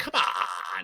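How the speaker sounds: mock goofy, playfully fed-up, exasperated voice. Speaker recalling how they call out to a player on the football field, mock-exasperated goofy voice. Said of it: "in like a goofy, exasperated voice".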